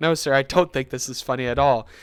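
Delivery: ordinary delivery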